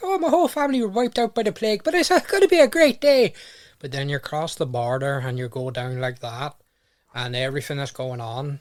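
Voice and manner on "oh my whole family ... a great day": very high, loud, cheerful Irish accent. Describing how Republic of Ireland accents sound, a cheerful Republic of Ireland accent. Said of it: "if you're in the Republic of Ireland, everything you say is really happy".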